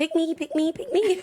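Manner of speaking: put-on high, eager, keen little-kid voice. Retelling eagerly joining in whatever dad did as a child: imitating own little-kid self. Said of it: "I was like the little".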